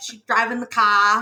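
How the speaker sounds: put-on thick Boston accent. Talking about characters with thick boston accents, imitating a thick boston accent. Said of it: "they can't say their R's ever".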